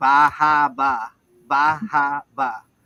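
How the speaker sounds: exaggerated Boston accent. Imitating how Boston people say a place name: imitating a Boston accent. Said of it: "the Boston accent".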